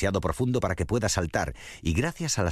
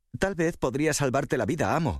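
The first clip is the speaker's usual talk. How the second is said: eager, high, pleading outcry; 8 semitones higher than usual. Reading a fable, the rabbit answers the tiger: eager cry. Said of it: "gritó el conejo con entusiasmo".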